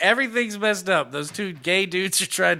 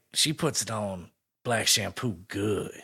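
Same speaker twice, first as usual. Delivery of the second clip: put-on 1970s action-film narrator voice; 9 semitones lower, 5 dB quieter than usual. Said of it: "I like how you're using the blaxploitation voice".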